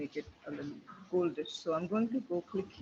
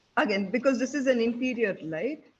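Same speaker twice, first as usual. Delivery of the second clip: higher, much louder, projected voice. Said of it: "You need to speak much, much louder".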